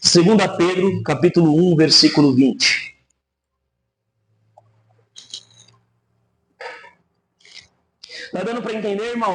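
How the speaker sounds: hurried, rushed, rapid-fire, rattled-off delivery. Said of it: "Eu tô falando muito rápido".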